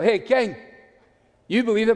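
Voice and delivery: Glaswegian Scottish accent. Retelling an address to King Agrippa as if from Glasgow, Glasgow accent. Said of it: "If you came from Glasgow".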